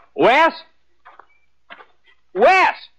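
calling out loudly. Radio drama character calling out for someone he is looking for, hollering. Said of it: "What are you hollering about".

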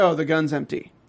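plain

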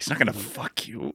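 put-on angry muttering. Acting out a listener's reaction when a quiz rival answers right, mock-angry mutter under breath. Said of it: "angrily under my breath".

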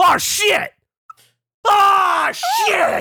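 very loud, very high, slow, drawn-out yell. Recounting slamming a locker shut and hearing a guy, retelling a guy's shout. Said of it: "Like at the top of his voice".

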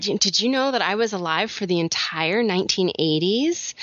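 ordinary delivery

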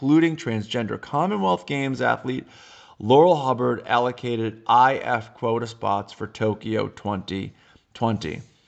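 plain

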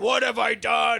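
slow, rough, loud, drawn-out, guilt-racked cry. Retelling a movie scene where the hero is racked with guilt: imitating guilt-ridden Optimus Prime. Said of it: "He's, like, racked with guilt".

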